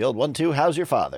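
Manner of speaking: put-on old-timey Transatlantic accent. Joking with the table: old-timey 1940s voice. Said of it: "I'm just trying to sound like it's nineteen forty-two".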